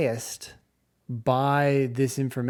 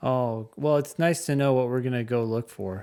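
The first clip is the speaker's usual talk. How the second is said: wry, dry, sarcastic aside. Reacting to a long test question read aloud: sarcastic. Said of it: "That's sarcasm, by the way".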